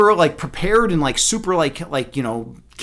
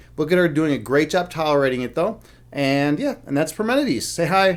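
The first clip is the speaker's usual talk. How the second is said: ordinary talk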